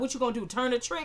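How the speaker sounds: ordinary delivery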